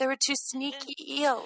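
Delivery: mock baby-voice accent. Imitating a woman who kept telling the story: soft baby-voice accent. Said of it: "I don't know why we're giving her an accent now".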